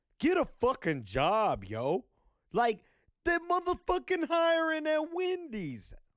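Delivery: very high, shrill, loud, swooping put-on New York accent. Retelling what an Uber driver said about a man with a sign, imitating a New York accent. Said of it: "but he was from New York".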